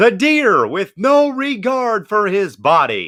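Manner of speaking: high-pitched, very slow, each word drawn out. Reading out a viewer's comment in his best Kevin Harlan voice. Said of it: "in his best Kevin Harlan voice".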